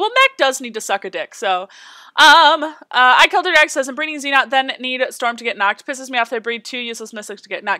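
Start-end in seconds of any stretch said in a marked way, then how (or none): none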